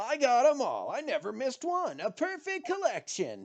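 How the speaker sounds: mimicking, mocking voice. Mocking another player by reenacting their character's testimony. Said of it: "Stop mocking me".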